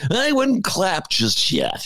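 slow swooping stand-up delivery. Retelling a comedian introducing a topic: imitating Louis C.K. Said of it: "And he goes".

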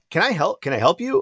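put-on annoyed, fed-up tone. Retelling opening the door to a stranger: retelling saying it kinda mad. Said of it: "I said it, like, I was, like, kinda mad".

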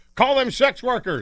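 high, slow yelling. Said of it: "I was yelling at the radio".

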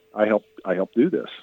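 ordinary talk

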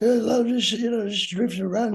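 quiet, hard-to-follow mumbling.

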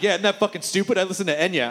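ordinary delivery

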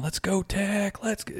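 put-on excited cheering, high and fired-up yell. Retelling what a fan next to him kept doing: imitating a fan screaming.

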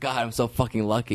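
ordinary talk

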